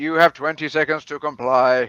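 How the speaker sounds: low, flat, deep, level robotic drone. Ordering Jamie to cover their eyes with the headband, in a RoboCop robot voice. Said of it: "That was meant to be a robotic accent".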